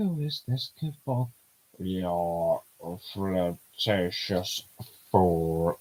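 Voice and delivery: low, deep, mechanical robot voice. Voicing a robot answering someone who flirts with it, in a robot voice. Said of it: "So that's my robot voice".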